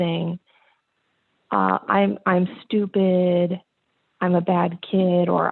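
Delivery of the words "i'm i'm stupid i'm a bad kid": put-on crying child's voice. Retelling what a crying son said when told to do yard work: imitating a child crying. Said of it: "And he starts crying".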